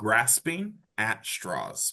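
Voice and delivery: slow, deliberate, careful enunciation of each word. Asked to say a phrase slower, repeating it: slow, deliberate. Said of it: "Can you say that slower for me?".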